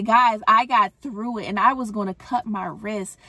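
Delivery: plain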